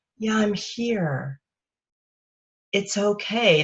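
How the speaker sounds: slow, soft-edged, soothing, calming nurturing voice. Explaining what voice to use, the speaker demonstrates a calming, nurturing voice. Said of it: "a voice that is more calming".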